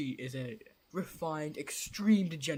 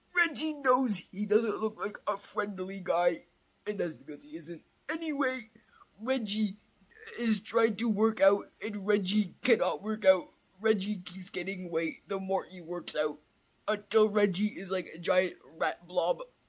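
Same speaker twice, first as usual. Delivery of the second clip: odd, exaggerated, overacted comic rat voice; 4 semitones higher, 4 dB louder than usual. Game narrator voicing Reggie the Rat speaking to the players, Reggie the Rat voice. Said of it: "but he's too fat to, / but he's too fat to, / you be you service dwellers should probably sleep. [name] knows sleep is important and it is nighttime. / like [name] doesn't even know what he sounds lik".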